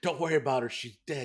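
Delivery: mock yelling. Retelling a scene where a man yells at others trying to help a lady, retelling a yell. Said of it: "he's yelling like".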